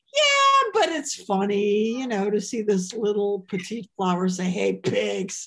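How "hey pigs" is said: gruff put-on voice, lower pitch. Showing the lowered stage voice used when a joke flops: gruff low-register put-on voice. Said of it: "your register goes down".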